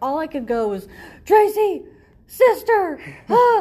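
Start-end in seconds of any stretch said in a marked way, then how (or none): 1.3-3.6 piercing shriek, very high and loud. The speaker recalls their reaction as their husband watched, retelling a scream. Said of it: "I screamed".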